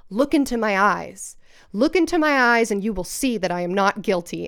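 mock-scary, intimidating tone, acted out. Retelling how a defendant addressed the jury at the end of his testimony, retelling an intimidating line. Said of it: "So scary and like intimidating".

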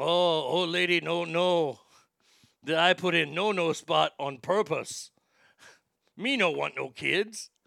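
slow, boastful caveman-style broken English. Retelling a story of a man bragging about his wife: imitating a man bragging in broken English. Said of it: "He's like".

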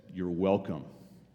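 put-on deliberate, pointed delivery. Retelling a waiter's reply after being overheard: imitating a very deliberate reply. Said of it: "he very deliberately says".

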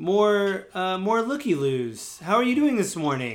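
mock patronizing, high, condescending, talking-down tone. Retelling how a man greeted arriving visitors; mock-condescending imitation. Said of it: "he talks in a really condescending voice".

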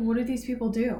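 ordinary talk, nothing marked

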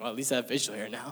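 normal talking voice

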